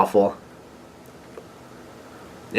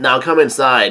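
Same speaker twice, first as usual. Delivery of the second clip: ordinary delivery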